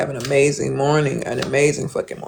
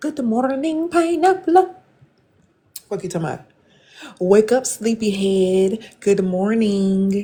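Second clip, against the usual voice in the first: gentle, upbeat, energetic voice, pitched up; 7 semitones higher than usual. Telling a listener how to wake the kids, upbeat wake-up greeting. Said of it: "Wake them kids up with some good energy".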